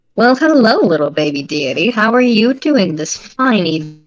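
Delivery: otherworldly cat creature voice. Voicing a Cheshire cat face with star pupils greeting a deity: voice of a Cheshire cat face. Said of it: "the voice that comes from it is this".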